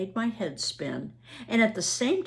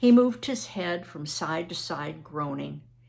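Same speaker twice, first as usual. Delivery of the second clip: usual speaking voice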